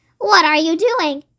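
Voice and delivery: piercing, shrill voice. Reading a story, Grandma calls to George from the next room: shrill voice. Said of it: "came the shrill voice from the next room".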